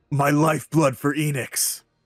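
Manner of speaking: high-pitched yell in a character voice. Voicing a shadowy figure in a blizzard whom the players hear: yelling in character. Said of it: "you hear yell".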